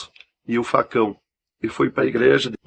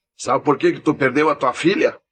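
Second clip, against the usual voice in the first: put-on fierce, harsh, rough, angry voice; 3 semitones higher than usual. Retelling what a voice from the air said to him: imitating a rough, angry voice. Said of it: "uma voz áspera, braba".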